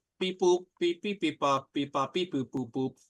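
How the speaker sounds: machine beeps and boops in a robot voice. Voicing an attacking robot closing in on a player: robot beeping voice. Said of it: "the third scab bot's gonna close distance on Angel and go".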